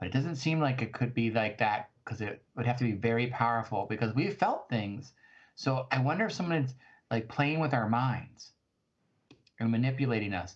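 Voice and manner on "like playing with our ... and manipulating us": ordinary talk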